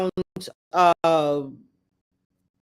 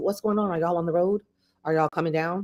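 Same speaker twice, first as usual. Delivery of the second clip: plain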